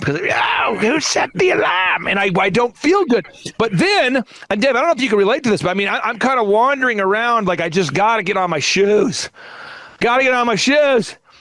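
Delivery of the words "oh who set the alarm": very slow creature voice, every word drawn out. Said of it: "I almost sound like Smeagol".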